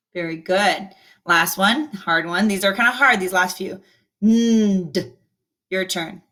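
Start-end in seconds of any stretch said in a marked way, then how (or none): 4.3-5.2 "nd" sound stretched out long, slow. In a repeat-after-me sound drill, stretch the 'nd' sound out slowly. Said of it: "I'm stretching it out a little bit instead of saying it quickly".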